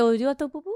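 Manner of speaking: vague fake French accent. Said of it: "So it's French".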